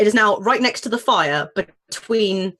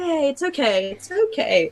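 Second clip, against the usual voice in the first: calm, reassuring, slow, pitched-up soothing voice; 6 semitones higher than usual. Soothing a stressed child in a burning building: soothing doctor voice. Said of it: "adopt your doctor voice and go".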